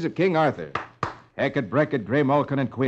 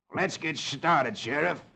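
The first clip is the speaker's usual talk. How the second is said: snarling voice; 7 dB quieter than usual. Narrating a western story, Sloat speaks to the sheriff, snarling. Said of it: "Sloat snarls".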